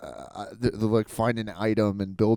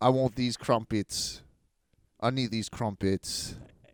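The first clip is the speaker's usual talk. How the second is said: put-on Manchester accent; 4 dB quieter than usual. Improvising a scene ordering crumpets in Manchester, in a Manchester accent. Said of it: "you're definitely a guy from Manchester ordering".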